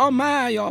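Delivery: very high, loud, pained outcry. A badger in a story suddenly cries out in pain. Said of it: "fájdalmasan felkiáltott".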